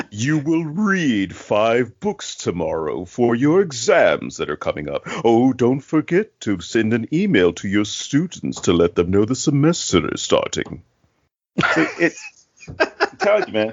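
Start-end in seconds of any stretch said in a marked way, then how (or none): 0.1-10.8 creepy, sinister voice. Speaker shows the impression done around the house after the movie: creepy Montgomery Dark voice. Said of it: "I can do the creepy voice".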